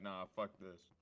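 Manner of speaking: angry outburst, mad tone. Retelling own reaction to losing diamond tools: retelling own angry outburst. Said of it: "I was so mad I was like".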